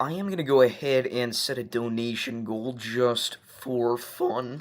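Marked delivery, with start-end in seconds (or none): 3.6-4.6 voice cracking badly. A streamer talks to the chat during a weather stream, with a bad voice crack. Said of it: "That was a bad voice crack".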